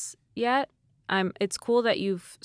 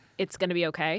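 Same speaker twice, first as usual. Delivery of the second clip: ordinary talk, nothing marked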